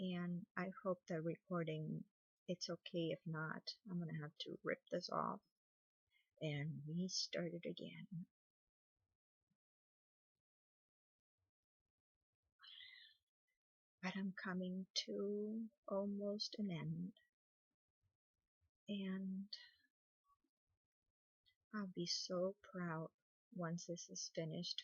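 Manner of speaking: speaking in a very low tone. Speaker recording while helping someone who is expecting, in a very low tone. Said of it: "I'm speaking in a very low low tone".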